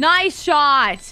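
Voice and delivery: shouting with excitement. Praising a teammate's shot during the match: excited yell. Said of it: "that sounded like I was yelling at you".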